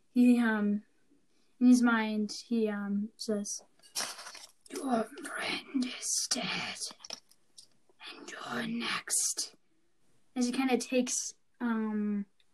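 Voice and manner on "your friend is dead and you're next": haunting, hushed, breathy, creeping monster whisper. Narrator voices a creature speaking into the listener's mind, haunting creature voice. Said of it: "haunting, creeping sensation ... this creature's voice".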